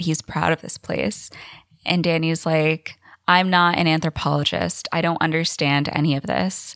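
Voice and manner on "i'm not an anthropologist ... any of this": ordinary talk, nothing marked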